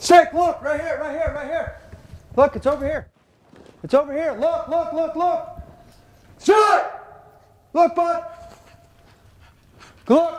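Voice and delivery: put-on very high-pitched yelling, repeated calls. Retelling calling a deaf hound to the scent: retelling yelling at a dog. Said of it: "I'm yelling at him at, like, point blank".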